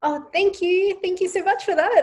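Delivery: very high-pitched, put-on customer-service voice. Showing her definite customer service voice: very high customer service voice. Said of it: "I have a definite customer service voice. It's just really high".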